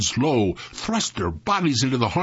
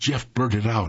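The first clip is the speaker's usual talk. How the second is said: ordinary delivery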